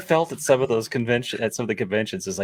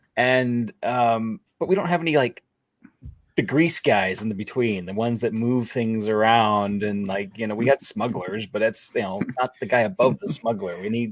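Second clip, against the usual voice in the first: ordinary talk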